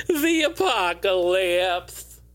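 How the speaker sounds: lisp with the voice going wonky. Listing games by year, saying the game's subtitle: lisp, voice goes wonky. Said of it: "I always get a lisp and my voice goes wonky".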